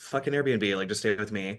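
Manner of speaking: plain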